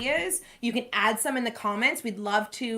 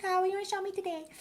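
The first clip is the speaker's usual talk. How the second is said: put-on tiny, very high four-year-old child voice; 9 semitones higher, 4 dB quieter than usual. Speaker recounts four-year-old Judah praying with his eyes closed; Judah's four-year-old voice. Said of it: "in his little four-year-old voice".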